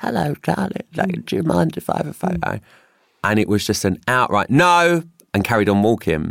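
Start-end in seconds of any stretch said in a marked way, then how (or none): 0.0-2.6 put-on very high, rough, creaky old-lady voice. Retelling an elderly woman asking for a photo, in a put-on elderly woman voice. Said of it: "elderly woman voice".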